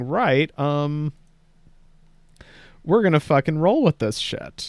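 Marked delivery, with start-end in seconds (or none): none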